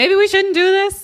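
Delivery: very high yell. Speaker retelling what they yelled in that moment, really high voice. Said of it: "in a really high voice".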